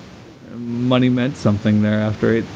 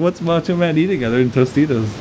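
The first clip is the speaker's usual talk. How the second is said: plain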